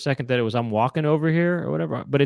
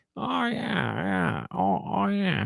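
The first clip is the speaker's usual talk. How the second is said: high, slow, drawn-out, rough, creaky drawl; 7 semitones higher, 4 dB quieter than usual. Trying out an impression for the other speaker: Adam Sandler impression. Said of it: "Does that sound like him or what?".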